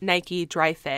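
ordinary delivery

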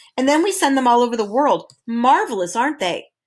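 plain reading voice

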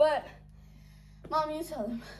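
breathless, panting, out of breath. Opening a video and handing the explaining over to mom, out of breath. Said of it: "I'm so out of breath".

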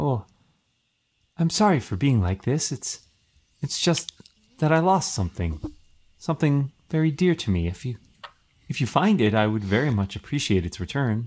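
gentle, pleasant acted voice. Voicing the weeping Spectre answering a greeting, Spectre's soft, pleasant tone. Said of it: "she responds in a soft, pleasant tone".

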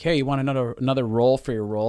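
plain

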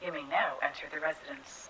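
synthetic, futuristic robotic computer announcer voice. Speaking as an automated voice system: futuristic robotic voice. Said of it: "robot voices always have to sound so".

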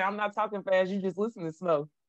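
usual speaking voice

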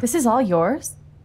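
astonished, surprised, taken-aback tone. Arriving at another character's home for the first time: surprised. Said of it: "Don't sound so surprised".

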